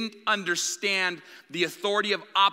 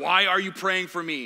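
possessed, unearthly, demonic, sinister voice. Retelling praying for someone, the speaker voices what answered: demonic voice. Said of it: "This demonic voice came out".

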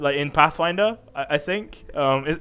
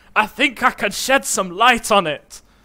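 put-on fantasy dwarf accent; 7 semitones higher, 6 dB louder than usual. A player offers help in character during the game, dwarven accent. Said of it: "With my dwarven accent".

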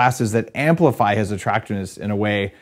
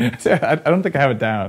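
usual speaking voice

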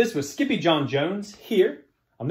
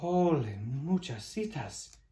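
gentle, very soft, quiet, barely above a hush; 8 dB quieter than usual. Narrator reading Skippy Jon's words after everyone cries his name, very soft voice. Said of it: "he said in a muy, muy soft voice".

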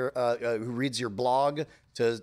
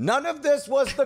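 put-on screaming voice, higher and louder; 13 semitones higher, 5 dB louder than usual. Imagining what a listener is screaming right now: imitating James Harrison screaming. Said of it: "James Harrison is screaming".

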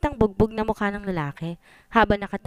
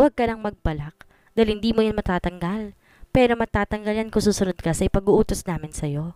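usual speaking voice

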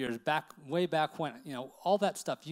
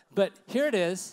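ordinary talk

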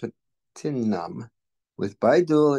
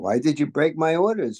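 insistent, pressing, demanding tone, higher pitch; 4 semitones higher than usual. Narrator voices Baba questioning the man in his service, demanding. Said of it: "Baba demanded".

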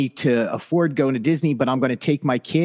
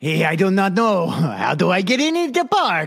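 bad Romanian accent, high, swooping, sing-song; 5 semitones higher than usual. Imagining a man asking cast members how to get in the park, Watto-like bad Romanian accent. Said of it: "The Romanian accent needs a little work".

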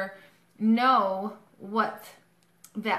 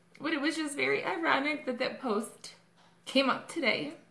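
tearful, pitched-up voice, crying through the words; 5 semitones higher, 3 dB quieter than usual. Back from a funeral, telling viewers about a post, crying while speaking. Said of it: "excuse me, I'm crying".

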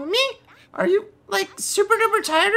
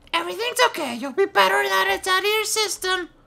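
forced, effortful, throat-straining put-on voice. Voicing Seiko comforting Naomi after she threw up: Seiko character voice. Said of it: "This voice really hurts".

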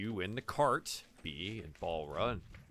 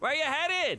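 calling out loudly, higher and louder; 7 dB louder than usual. Voicing the grape-stomping man calling to the cart: yelling out. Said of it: "he yells out again".

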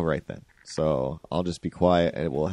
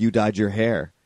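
mock accusing yell, kept small and mild; 3 semitones higher than usual. Retelling getting yelled at right after walking in the door, imitating someone yelling. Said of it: "I kind of get yelled at for".

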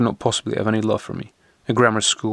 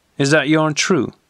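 menacing, probing, threatening tone, pitched up; 5 semitones higher, 3 dB louder than usual. Challenging the storyteller once his tale is finished, in a menacing tone. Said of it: "he asked in a menacing tone".

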